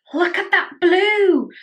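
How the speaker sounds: very high, shrill, terrible Scottish accent. Swatching eyeshadows and exclaiming over a blue: terrible scottish accent. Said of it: "That was a terrible, terrible Scottish accent".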